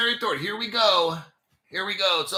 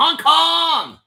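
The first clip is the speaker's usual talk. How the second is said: loud, high put-on Hong Kong accent, Kong stretched; 8 semitones higher, 8 dB louder than usual. Announcing the next article, mock Hong Kong accent. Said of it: "You always got to say it like you're from Hong Kong".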